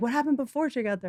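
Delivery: scornful, derisive copycat parroting tone. Teasing the other speaker by imitating their question, mocking imitation of the other speaker. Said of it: "I wasn't like".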